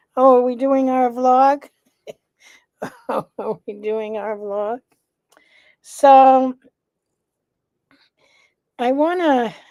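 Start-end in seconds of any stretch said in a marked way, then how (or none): 0.1-4.8 raised, higher pet-cat voice. Voicing the cat as it comes in during the vlog: voicing Bella the cat. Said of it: "She's like".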